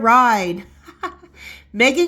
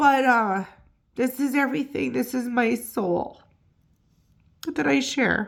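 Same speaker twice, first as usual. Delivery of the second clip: choked up, holding back tears; 6 dB quieter than usual. Sharing news of being monetized, the speaker thanks viewers, choked up. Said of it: "I told myself not to do this".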